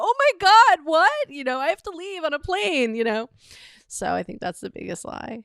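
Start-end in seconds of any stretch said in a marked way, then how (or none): 0.0-3.3 mock crying, much higher and slower. Retelling a phone call from her mom, imitating her own fake crying. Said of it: "And I'm trying to cry".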